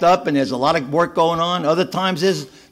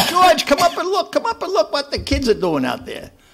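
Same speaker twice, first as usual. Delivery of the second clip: put-on, piercing, high, swooping, animated yell; 10 semitones higher than usual. Retelling how his wife called him to the window: imitating his wife yelling. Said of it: "she's yelling at me".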